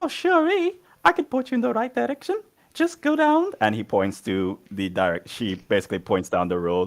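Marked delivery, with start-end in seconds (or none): 0.0-3.5 tiny, very high-pitched, small little voice. Voicing a small child pointing the group toward the train station: Oliver Twist voice. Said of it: "that is my little, um, Oliver Twist voice".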